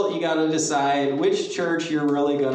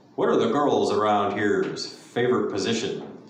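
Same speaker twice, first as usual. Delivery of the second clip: big man's deep, low, heavy put-on voice; 6 semitones lower than usual. Retelling what a large man at an auto parts store asked, imitating his deep voice. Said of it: "a large man said to me in a deep voice".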